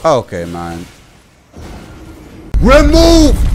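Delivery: furious, fed-up, livid outburst, high and swooping. Streamer just one-shot in a game, livid. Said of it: "I am livid".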